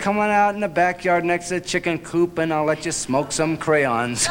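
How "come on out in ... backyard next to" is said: ordinary delivery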